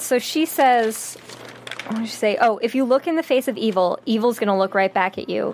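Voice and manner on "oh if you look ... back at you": plain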